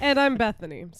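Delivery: giggling and laughing through the words. Introducing yourself by name, laughing while talking. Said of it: "Sorry for laughing through my name".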